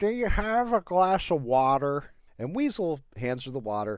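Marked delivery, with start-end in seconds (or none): 0.0-2.0 slow, high, whining, dragged-out delivery. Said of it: "taking that whiny voice with her".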